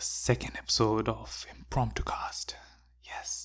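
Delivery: unhurried, slow whispered voice. Opening the second episode of the podcast, whispering. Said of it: "I don't know why I'm whispering".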